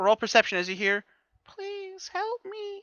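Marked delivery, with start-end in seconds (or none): 1.5-2.8 put-on tiny little girl's voice, very high and hushed. Describing what the players hear after a perception roll, little girl's voice. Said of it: "in this like little girl's voice".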